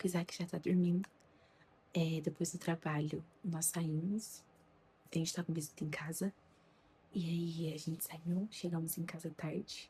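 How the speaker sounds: softly spoken, soft and low voice. Ending a vlog while someone at home is already asleep, speaking softly. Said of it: "Eu tô falando até baixo".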